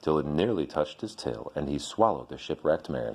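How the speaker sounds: ordinary delivery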